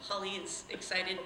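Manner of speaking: usual speaking voice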